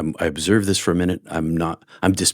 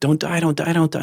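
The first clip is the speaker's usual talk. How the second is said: mock, very high, blubbering, sobbing wail; 10 semitones higher than usual. Retelling waking up to a man shaking him and begging; imitating someone crying and screaming. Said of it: "he's crying, and he's screaming".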